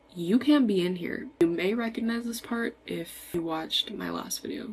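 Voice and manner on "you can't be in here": ordinary talk, nothing marked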